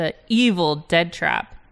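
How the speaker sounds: strong stress on the word EVIL.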